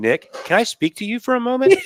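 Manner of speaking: very high-pitched, careful, polite voice. Picturing a friend asking the loud guest outside for a word: imitating someone speaking very quietly. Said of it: "walking outside very quietly saying".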